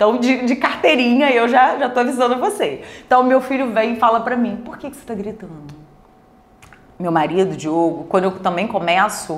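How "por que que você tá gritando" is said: very soft, hushed, barely audible voice. Speaker acts out what their son asks them, quoting the son softly. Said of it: "mas baixinho".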